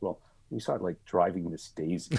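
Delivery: mock sheepish, small-sounding tone. Retelling a colleague's answer to a child's question: imitating a sheepish answer. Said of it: "kind of sheepishly goes".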